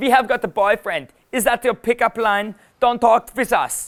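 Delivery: played-up put-on German girl's accent. Demonstrating how girls shut down a pickup line, the speaker uses a German girl accent. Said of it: "I'll use a German girl accent".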